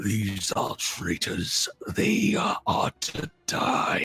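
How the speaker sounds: deep, low dragon voice with a pronouncing tone. A creature yanks its mouth away and speaks to the party, low draconic tone. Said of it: "you hear it speaking in a low draconic tone".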